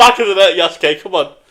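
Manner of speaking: high, loud, roaring cheer with laughter.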